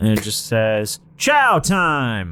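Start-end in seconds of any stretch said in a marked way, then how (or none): 1.2-2.3 loud, ringing voice, higher. Voicing a voice that rings out to the prisoners in their cells: voice ringing out. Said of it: "you hear a voice ring out".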